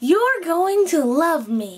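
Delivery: steady, high rage.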